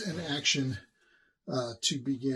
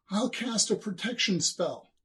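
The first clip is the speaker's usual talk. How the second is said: high, screamed call. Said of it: "begins to scream".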